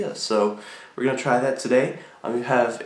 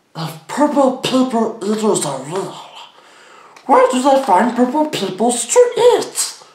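shrill, swooping creature voice, pitched way up, belted; 12 semitones higher, 8 dB louder than usual. Trying out voice impressions, the speaker attempts a Sméagol voice. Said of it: "I can kind of do, like, Sneagol".

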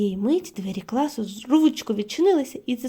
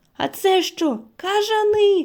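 high exclamation, crying out, very slow and drawn out; 8 semitones higher, 4 dB louder than usual. As flying creatures burst into the classroom, a child is exclaiming. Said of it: "вигукнула Еш".

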